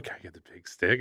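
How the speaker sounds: soft-spoken, hushed.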